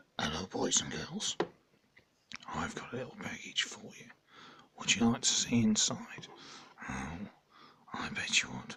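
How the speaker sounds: sinister, creepy, very soft whispered voice. Speaker addressing boys and girls in a put-on bit, creepy voice. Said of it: "that's my creepy voice for the day".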